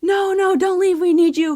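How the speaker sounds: high, loud pleading and begging.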